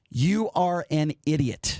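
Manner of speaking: very slow, deliberate spelling-out, each word set apart. Telling Paul he will say it very slow so he understands. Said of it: "I'm going to say it very slow for you".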